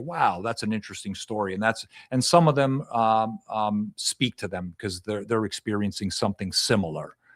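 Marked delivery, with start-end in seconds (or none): none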